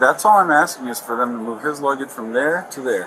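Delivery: ordinary talk, nothing marked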